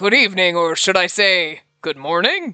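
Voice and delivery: cheerful, jolly, jovial talking pumpkin voice. Voicing a talking pumpkin in a game: jovial talking pumpkin voice. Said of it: "the pumpkin has a jovial voice now".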